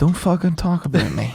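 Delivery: calm, composed, unbothered delivery, a bit high. Repeating a man's remark a second time, after announcing it: retelling a remark calmly. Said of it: "Let me say it calmly".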